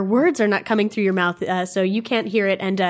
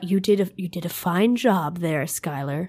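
muttering under the breath; 2 semitones lower than usual. A game master voices one of the priests speaking to a player's character: muttering. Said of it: "One of the Aeon priests mutters".

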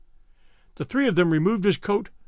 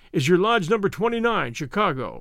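plain

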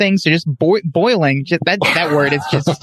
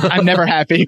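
ordinary talk, nothing marked

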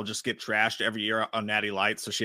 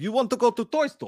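mock Russian accent, higher and slower; 12 semitones higher, 4 dB louder than usual. Dad acting out teasing his kids in the car, mock Russian accent. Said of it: "I do it to the kids sometimes".

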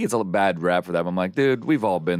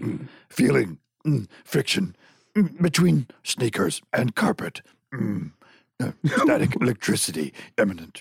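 put-on master voice, pitched higher; 5 semitones higher than usual. Showing a Yoda impression after being asked for one: Yoda voice. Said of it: "You got a Yoda, right?".

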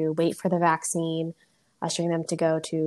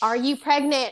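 mock holler, pushed hard, raised and pitched up; 9 semitones higher, 4 dB louder than usual. Retelling asking older patients through a face mask: imitating own yelling. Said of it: "So I'm yelling at these patients".

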